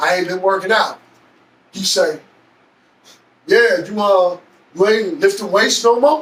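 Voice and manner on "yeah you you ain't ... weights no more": ordinary delivery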